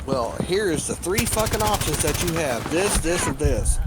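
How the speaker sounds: plain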